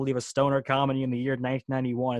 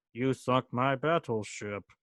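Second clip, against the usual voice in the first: weird, strange fake Swedish accent. Recalling a dad's lifelong childhood catchphrase, in William Sadler's weird non-Swedish accent. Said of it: "like that weird non-Swedish accent".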